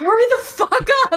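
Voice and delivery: urgent high-pitched yell. Playing a character in a game, shouting at a slow companion to hurry: shouting in character. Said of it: "I'm gonna shout at Eamon".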